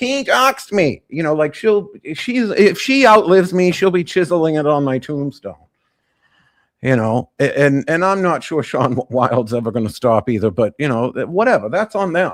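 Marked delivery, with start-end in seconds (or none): 0.0-1.0 put-on screaming voice, higher pitched. Imagining someone screaming from the other room: imitating Amarella Moon screaming. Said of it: "she's screaming from the other room".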